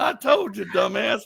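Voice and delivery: put-on high-pitched old man voice. Retelling a ghost recording of an old man: imitating an old man's voice. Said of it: "Then the old man's like".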